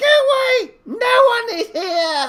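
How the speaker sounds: shrill, tiny voice, very high and loud. Game master voicing the answer after a player yells to ask if anyone's there: tiny voice. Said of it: "you hear a tiny voice going".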